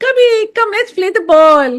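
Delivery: very high, very loud playful calling tone. A parent acting out calling their three-year-old to play, acting out a playful call. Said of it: "That's called a playful mindset".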